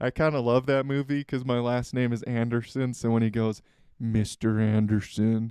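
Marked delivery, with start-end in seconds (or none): 4.0-5.5 low, deep voice. Explaining why he loves a movie sharing his last name, quoting in deep voice from The Matrix. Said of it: "he says it in that deep voice".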